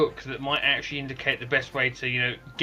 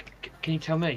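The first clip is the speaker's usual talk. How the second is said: cautious, hushed half-whisper, stumbling start; 3 semitones higher, 3 dB quieter than usual. Voicing a character who asks a question: half-whisper. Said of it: "Zen will carefully sort of whisper".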